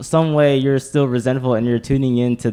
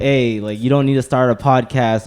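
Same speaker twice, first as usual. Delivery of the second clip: ordinary delivery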